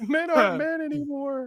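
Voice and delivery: put-on lecturer voice, softened Canadian accent. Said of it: "a less Canadian Jordan Peterson".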